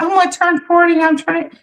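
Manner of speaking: squeaky, high, teasing, mocking put-on voice. Teasing the other speaker by repeating their words back: mocking imitation. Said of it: "Come in here and be like".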